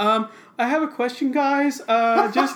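high, loud, super professional, businesslike voice. Retelling a movie scene with a Velociraptor villain: imitating a super professional voice. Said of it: "a super, like, professional voice".

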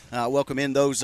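normal talking voice

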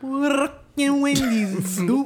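put-on strong New York accent. Imitating a man ordering at a wendy's drive-thru: imitating a strong new york accent. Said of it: "in a New York accent".

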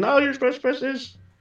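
mock, lightly shouted party-style yell. Retelling own words at a watch party: imitating own screaming. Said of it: "I'm screaming".

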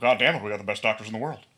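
blustering put-on voice. Hosts joking about a wrestling boss's medical care; one does a Vince McMahon impression. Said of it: "please keep doing this".

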